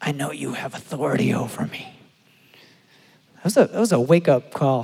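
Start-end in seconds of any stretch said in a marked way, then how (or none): 0.0-1.9 low, quiet, possessed demonic voice. Retelling a demonically manifesting man answering the speaker's command: demonic voice. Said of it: "in a demonic tongue goes".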